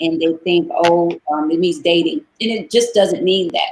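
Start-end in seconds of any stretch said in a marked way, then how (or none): none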